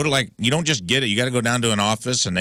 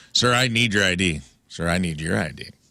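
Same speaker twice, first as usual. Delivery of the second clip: slow, put-on sexy voice, sultry and seductive; 3 semitones lower than usual. Acting out an airport ID check after being asked: put-on sexy voice. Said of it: "ask it in a sexier way".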